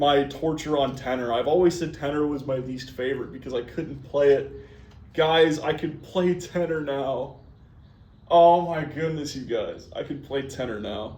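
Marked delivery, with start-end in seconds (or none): 5.1-11.2 teary, slightly crying, on the edge of happy tears. Celebrating finally being able to play Tenor: crying a little. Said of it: "I'm actually crying a little bit".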